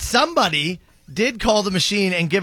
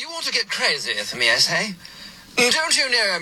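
put-on British accent throughout; 2 semitones higher than usual. Retelling how someone tried the line a second time, in a British accent. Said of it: "He then tried one with a British accent".

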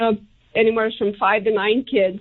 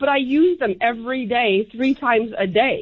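normal talking voice

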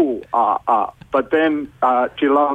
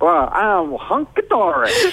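put-on, pitched-up southern American accent; 7 semitones higher than usual. Radio host answers a caller named Tim, in a southern American accent. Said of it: "You've both gone southern".

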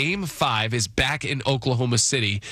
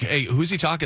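ordinary delivery

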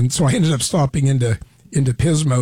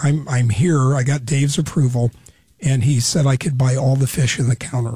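ordinary talk

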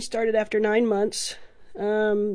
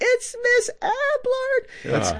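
very high-pitched shrieking scream. Recalling a group spotting her at the door, retelling them screaming. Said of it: "they start just screaming".

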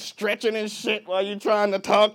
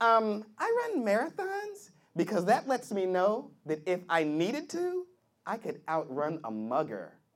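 put-on girl voice, quieter; 3 semitones higher, 8 dB quieter than usual.

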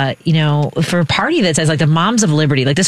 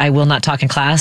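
normal talking voice

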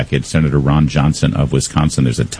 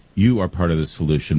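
plain

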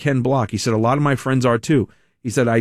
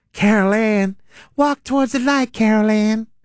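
very high, calling-out psychic-medium voice; 10 semitones higher than usual. Showing how a governor candidate's voice sounds, like the lady from Poltergeist. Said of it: "sounds like the lady from Poltergeist".

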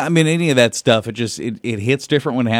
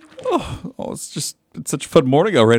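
misty, teary, tearing-up, pitched-up voice; 5 semitones higher than usual. Describing how fun the morning already is, tearing up. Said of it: "I'm just getting a little misty".

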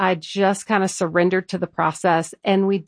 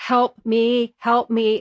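put-on terrified scream, higher; 3 semitones higher than usual. Retelling a fast ride with a friend: imitating screaming for her life. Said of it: "I was screaming, like, for my life".

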